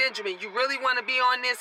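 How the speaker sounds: normal talking voice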